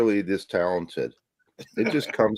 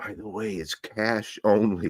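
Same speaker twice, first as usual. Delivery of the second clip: quiet, slow, hushed, confidential stage whisper; 2 semitones higher, 4 dB quieter than usual. Retelling what the record store owner says at checkout: imitating Rob half-whispering. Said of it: "Rob comes up and whispers".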